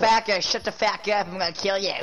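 put-on backwoods Western hillbilly accent. Telling off another character in a Western hillbilly accent. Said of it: "That sounds like a Western hillbilly accent".

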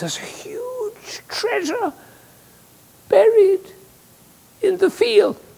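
feeble, weak, halting, very high dying voice. Retelling a story, the speaker voices a dying old man to his sons: imitating a weak dying voice. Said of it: "he says in a weak voice".

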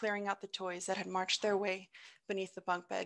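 ordinary delivery

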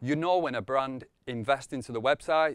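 plain

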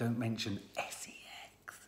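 unvoiced hushed whisper. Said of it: "You don't have to whisper".

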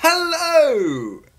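over-the-top, very high, drawn-out "hello". Restarting a video intro and trying a greeting: over-the-top hello. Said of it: "that's too much".

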